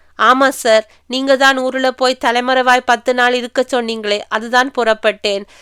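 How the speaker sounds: plain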